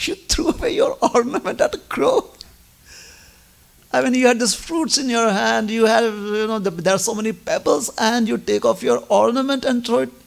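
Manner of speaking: mock amused voice, talking through laughter. Retelling a story where a character finds a thrown ornament funny: acting out laughing while talking. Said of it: "he starts laughing like".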